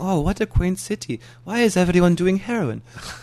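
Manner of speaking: put-on German accent. Recalling German tourists at the bike shop where he worked, in a German accent. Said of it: "Sorry for that accent".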